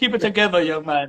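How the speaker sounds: put-on accent dropping R sounds. Retelling being told to keep it together while laughing, in Jeff's accent, no R's. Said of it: "he can't pronounce his R's".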